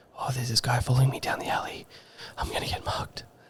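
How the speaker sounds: soft, airy whisper. Retelling a guy following down the alley, whispered to oneself. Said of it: "That's me just like whispering to myself".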